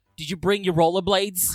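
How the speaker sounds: loud, big put-on American accent, character voice. Imitating an actress whose American accent now sounds like Harley Quinn: Harley Quinn voice. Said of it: "now just sounds like, uh, Harley Quinn now".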